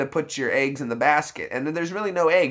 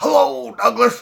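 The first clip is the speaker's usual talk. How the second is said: very high, loud, raspy voice squeezed from mouth side; 9 semitones higher, 6 dB louder than usual. Recalling a cartoon neighbor, doing the Mister Dink voice out of the side of the mouth. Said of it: "I have to do the side of the mouth for that voice".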